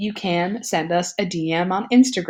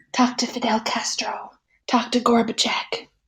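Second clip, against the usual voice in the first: put-on parakeet whisper, pitched higher; 5 semitones higher than usual. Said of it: "The parakeets are there whispering like".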